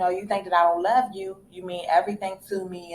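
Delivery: ordinary talk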